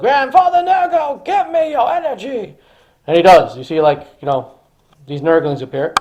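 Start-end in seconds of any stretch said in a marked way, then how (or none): 0.0-2.6 pleading scream, very high and slow, drawn out. Narrating a battle, voicing a character calling on grandfather nurgle: character screaming a plea. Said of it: "as he screams out to Grandfather Nurgle".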